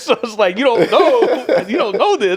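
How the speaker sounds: speech through laughter.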